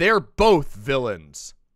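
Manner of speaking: loud, swooping, theatrical, sweeping dramatic voice. Reading chat comments aloud as different characters: put-on dramatic voice. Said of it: "read this with dramatic voices".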